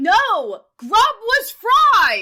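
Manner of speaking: very slow, high, loud, drawn-out shouting. Correcting another speaker about which team won: yelling. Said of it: "please stop yelling at me".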